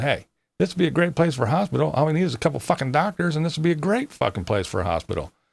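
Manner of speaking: acted high yell. Recalling going out into the hospital hall, retelling his own yelling. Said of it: "I went out in the hall and I'm yelling".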